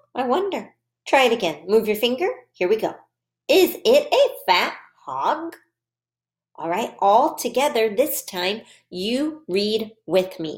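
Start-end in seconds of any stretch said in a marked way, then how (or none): 3.4-5.5 rising, question-like intonation climbing on hog. Practicing reading a sentence aloud for listeners to follow, with rising question intonation. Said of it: "I'm going to read this sentence with a question voice".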